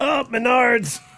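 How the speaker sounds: very high voice through clenched, gritted teeth. Imagining the commercial guy kicked in the nards, imitating speech through clenched teeth. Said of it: "he says it through clenched teeth".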